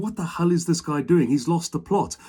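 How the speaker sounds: ordinary talk, nothing marked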